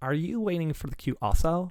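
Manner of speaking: loud put-on California girl American accent. Asked for an American accent, trying a put-on California accent. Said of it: "Give us your best American accent".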